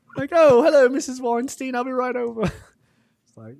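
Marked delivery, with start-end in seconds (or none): 0.4-2.5 over-the-top fake British accent, high, ridiculous. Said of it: "he puts on this like fucking ridiculous British accent".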